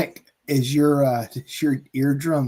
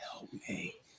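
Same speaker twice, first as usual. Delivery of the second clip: put-on low grunting whisper, quieter. Imitating a faint voice heard on a recording: imitating a low gruntal whisper. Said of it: "very low gruntal whisper".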